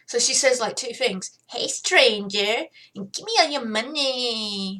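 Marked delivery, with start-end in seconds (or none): 1.4-4.8 put-on cat girl lady voice. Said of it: "this is the voice I give for Valerie".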